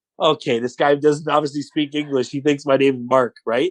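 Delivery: ordinary delivery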